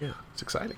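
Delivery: soft, sarcastic whisper.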